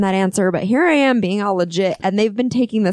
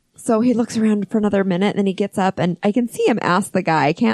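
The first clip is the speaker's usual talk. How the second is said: ordinary talk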